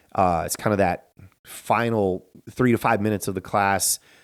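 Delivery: ordinary talk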